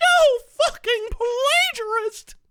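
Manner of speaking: very high, loud, shrill squeaky put-on voice. Redoing a line after asking for a squeakier read, mock squeaky high voice. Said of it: "Could you give it a little squeakier?".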